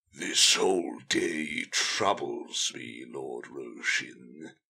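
very low, rasping, parched voice. A narrator reads Talabek telling Lord Roshin the day troubles him: rasping, parched voice. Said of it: "The man's voice was rasping and parched".

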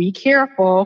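plain

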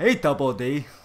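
booming, very loud cartoon character voice. Doing another of the cartoon character's phrases: Ed from Ed, Edd n Eddy voice. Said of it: "What's another one of his phrases".

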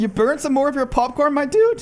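voice breaking and cracking mid-line. Gamer commentating a match to viewers, voice cracking. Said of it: "That just voice cracked".

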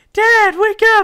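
put-on very high, very loud little girl voice. Voicing Amanda trying to wake her sleeping dad, in the Amanda little girl voice. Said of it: "do a little girl voice".

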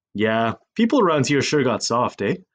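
plain reading voice

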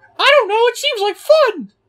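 high, loud squeaking voice. Retelling a guy who hit the speaker's car with a bat, crappy Mickey Mouse voice. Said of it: "I gave him a crappy Mickey Mouse voice".

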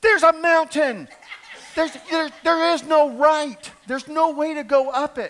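acted scream. Telling about a navigation box giving wrong turns, retelling screaming at the GPS. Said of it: "I'm screaming at this little box going".

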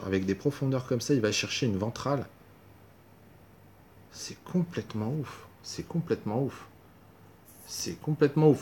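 quiet, simmering, angry muttering. Reacting to a lost poker hand, the player speaks angry. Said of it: "je suis en colère".

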